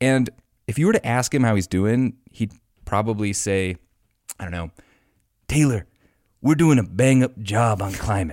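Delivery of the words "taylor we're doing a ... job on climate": bad, put-on mobster-style voice. Imitating Joe Biden answering how he's doing: terrible Joe Biden impression. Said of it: "That was a terrible impression".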